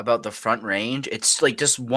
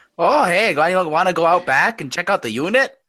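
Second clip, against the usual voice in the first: higher-pitched Yooper accent; 7 semitones higher, 3 dB louder than usual. Joking along on Hey Dare Bub, in a Yooper accent. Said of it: "which is kind of a Youper accent".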